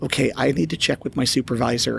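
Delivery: normal talking voice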